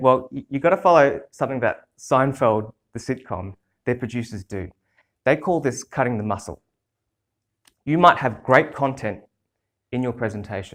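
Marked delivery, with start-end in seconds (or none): none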